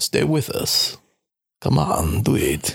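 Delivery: put-on coaxing, urging tone in a Russian accent. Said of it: "I lost my Russian accent".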